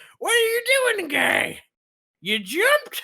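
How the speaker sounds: silly, very high, swooping sing-song voice. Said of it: "[name] comes out a door at the bottom, and he goes".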